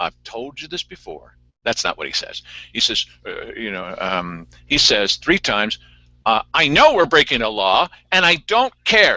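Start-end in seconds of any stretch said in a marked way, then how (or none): 6.5-9.2 very loud, high-pitched, full-force shout. Quoting a man who said this line three times: very loud. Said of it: "And he said it that loud".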